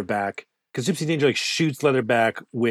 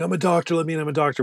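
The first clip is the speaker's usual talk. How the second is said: mock yelling, higher pitch; 4 semitones higher than usual. Recapping a movie scene where a man runs into a public shelter, retelling a yell. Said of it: "he's like yelling the whole time".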